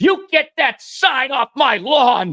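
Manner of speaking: shrill, very high, very slow, stretched yelling. Retelling a woman running out of her house while he places a sign: imitating her yelling. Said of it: "She's pointing at me and yelling at me".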